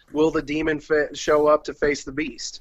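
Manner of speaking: usual speaking voice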